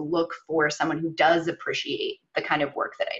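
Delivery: ordinary talk, nothing marked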